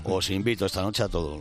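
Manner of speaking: usual speaking voice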